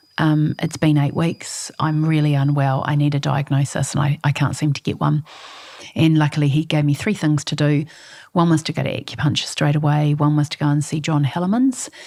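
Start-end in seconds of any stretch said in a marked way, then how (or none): none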